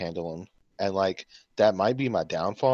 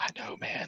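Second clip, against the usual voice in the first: breathy, hushed whisper. Retelling what a friend on the bus said: imitating a friend whispering. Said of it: "he was, like, whispering".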